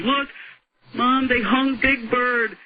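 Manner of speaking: put-on high-pitched kid calling out. Retelling a benefit show where a kid yelled to his mom, imitating a kid yelling. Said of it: "one of them is yelling".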